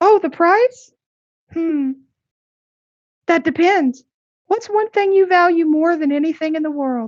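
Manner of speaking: very high, fairy-like pixie voice. Game master voicing a pixie answering a player's question, pixie voice. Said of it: "the voice of the pixie talking directly to you".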